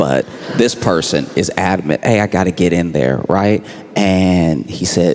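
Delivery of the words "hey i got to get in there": normal talking voice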